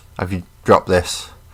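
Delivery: ordinary delivery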